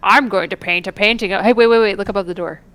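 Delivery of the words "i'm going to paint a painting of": smug, proud, self-pleased tone. Retelling a game character's line about painting, imitating a proud voice. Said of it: "You could even hear the pride in his voice".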